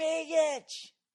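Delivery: very high Dallas drawl, name stretched to two syllables. Retelling how fans stretch one syllable into two: imitating a two-syllable Dallas drawl. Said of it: "make it two".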